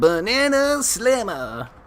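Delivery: very high, silly cartoon character voice. Recalling the Donkey Kong TV show, imitating Donkey Kong. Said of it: "Where he was like".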